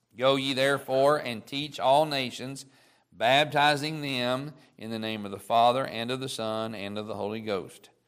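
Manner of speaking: usual speaking voice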